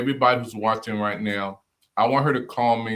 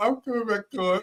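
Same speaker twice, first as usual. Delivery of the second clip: mock little girl's voice, pitched higher; 11 semitones higher than usual. Imitating the other speaker's promise to come back, little-girl voice. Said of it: "like you was, like, three years old".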